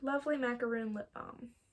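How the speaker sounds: plain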